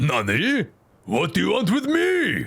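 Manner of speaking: slow, drawled dumb comic character voice with big pitch swoops. Trying out a voice for a comic relief character: Joseph Joestar type voice. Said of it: "a dumb Japanese Joseph Joestar type voice".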